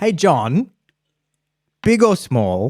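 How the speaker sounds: beat after the name, rising pitch. Demonstrating how to deliver a question segment, pause after the name. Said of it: "Then the pause is important".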